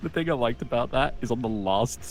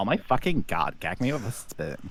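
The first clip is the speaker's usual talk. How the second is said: exaggerated, put-on valley girl accent; 3 semitones lower, 3 dB quieter than usual. Showing off a favorite voice to do, Valley Girl voice. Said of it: "I kind of like doing the Valley Girl voice".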